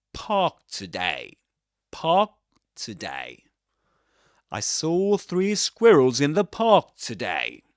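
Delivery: park in British English pronunciation, repeated. Teaching how to say park, the speaker models it in British English pronunciation. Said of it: "but park in this accent".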